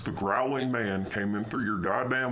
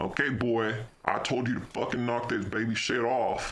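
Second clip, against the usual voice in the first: put-on cranky, angry old man voice, scolding; 2 semitones higher than usual. Retelling a childhood story, the speaker acts out the man with the belt: put-on angry old man voice. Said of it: "this angry old man here".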